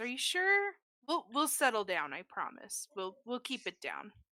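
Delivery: honeyed, sugary, very sweet sing-song tone. Role-play character answering men who want them gone, sweetly. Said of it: "looks very sweetly at them and says".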